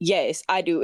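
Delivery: low, dead-serious, acted-out tone, no joking. Retelling how she answered the speaker's question, imitating her serious tone. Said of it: "says this in a serious ass tone".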